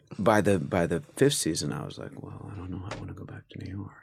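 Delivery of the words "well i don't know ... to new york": very quiet, held-in, internal, low-key mumble. Showing own later acting style on the same line: imitating understated internal acting. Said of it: "everything was internal".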